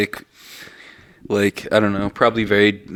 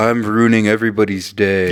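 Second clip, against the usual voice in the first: ordinary talk, nothing marked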